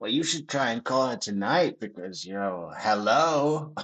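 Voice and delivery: hello stretched out long. Mimicking how another speaker talks: imitating how she talks. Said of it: "She does these things when she talks".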